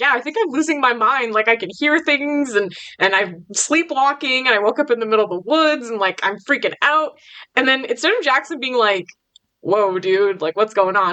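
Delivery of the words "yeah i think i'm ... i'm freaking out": ordinary talk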